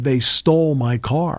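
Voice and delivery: mock upset cry, high and drawn out. Retelling someone discovering their car is gone: imitating someone screaming. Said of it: "he screams out".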